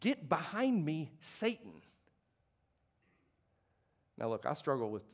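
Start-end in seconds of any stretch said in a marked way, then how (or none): none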